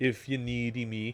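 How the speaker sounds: ordinary delivery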